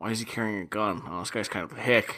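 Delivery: low, snide mutter under the breath. Acting out what the characters should have said: imitating snide muttering under breath. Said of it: "snidely saying under your breath".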